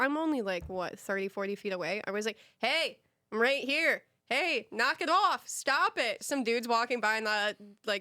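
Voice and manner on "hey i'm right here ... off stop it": mock hollering, as if from a distance. Recounting a man booting the car, retelling the yell from across the street. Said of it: "And I'm like yelling from across the street".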